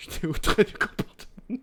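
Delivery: high, prissy, mock-prim voice.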